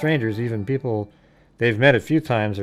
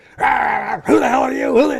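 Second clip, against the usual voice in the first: very high, shrill, loud, vicious barking snarl; 5 dB louder than usual. Retelling how the dog reacted to a new hat: imitating a growling dog. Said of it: "growling and barking at me, like, just viciously".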